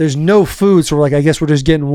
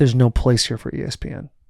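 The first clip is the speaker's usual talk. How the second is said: hushed, breathy mutter under the breath; 3 semitones lower, 5 dB quieter than usual. Retelling what a guy on the elevator said: imitating muttering under his breath. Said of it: "He says under his breath".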